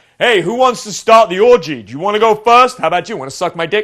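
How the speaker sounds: attention-commanding tone. Speaker shows the wrong voice for starting an orgy, in an attention-grabbing voice. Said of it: "he used the wrong voice".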